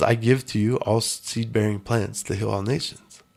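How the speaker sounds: ordinary delivery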